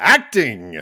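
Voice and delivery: single word belted out, very loud. Picturing the character doing a sketch-comedy bit, Jon Lovitz "Acting!" bit. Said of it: "picturing, uh, Jon Lovitz on, uh, on S N L and having her just go".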